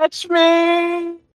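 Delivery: very high falling scream, "me" stretched. Voicing a character plunging toward the ground, mouth wide open: screaming in character. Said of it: "and he's screaming".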